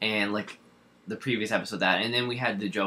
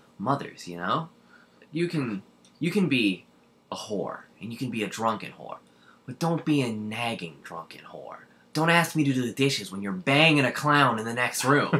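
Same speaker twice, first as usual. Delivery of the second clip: comic movie-villain character voice; 4 semitones higher, 3 dB louder than usual. Retelling a favorite scene's line: imitating the Joker's line. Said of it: "Where he's like".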